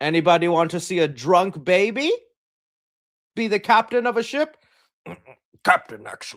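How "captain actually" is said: put-on pirate voice, much lower pitch. The speaker shows off his best impression, a Jack Sparrow impression. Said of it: "That's my best Jack Sparrow impression".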